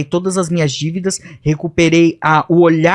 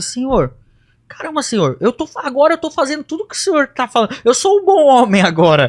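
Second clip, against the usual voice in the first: mock crying through sobs, high and swooping; 8 semitones higher than usual. Retelling praying to god in the bedroom, as the past self: retelling a crying prayer. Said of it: "Chorando, chorando, falando".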